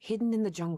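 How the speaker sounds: plain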